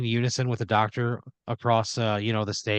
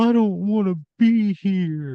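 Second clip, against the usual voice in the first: put-on, tearful, sniffly whimper, pitched up, very drawn out; 9 semitones higher, 5 dB louder than usual. Acting out a child telling his dad on the phone he's unhappy: acted crying, put on. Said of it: "sniffling and crying".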